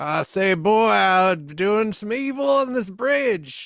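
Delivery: high cartoon character voice. Riffing on a film, the speaker slips into a Foghorn Leghorn impression. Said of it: "It is missing some foghorn leghorn".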